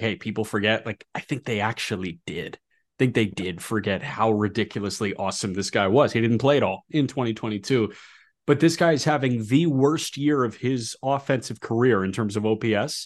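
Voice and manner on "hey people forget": usual speaking voice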